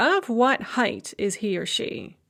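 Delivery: normal talking voice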